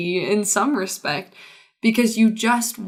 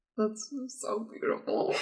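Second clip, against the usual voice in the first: whispered words broken up by laughter; 12 dB quieter than usual. Hearing a touching answer read out, the speaker reacts, laughing while talking. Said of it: "I'm sorry that I'm laughing".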